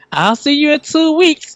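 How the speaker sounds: shrill, very high screamed shout. Retelling what a lady at work screamed to another employee: imitating someone screaming out. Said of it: "she screamed out".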